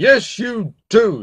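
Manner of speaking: severe, stern tone. Narrator reading the king answering the princess who asks if she must, stern. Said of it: "said the king sternly".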